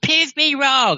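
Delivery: put-on yelling. Retelling what that nerd yells and screams, imitating someone yelling. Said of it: "he yells and he screams".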